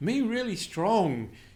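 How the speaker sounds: put-on high, slow little toddler voice.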